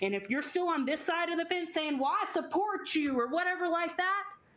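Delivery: Texan accent slipping through. Making a point to listeners about both sides of the fence: Texas accent slipping out. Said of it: "my Texas accent came out for a second".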